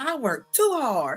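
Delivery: put-on screaming. Mocking someone's rant about dishes: imitating someone screaming. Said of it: "Why is she screaming like".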